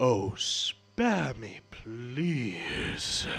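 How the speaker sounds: deep booming monster voice. Retelling a scene where a dragon cuts another character off, in a booming dragon voice. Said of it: "in a booming voice".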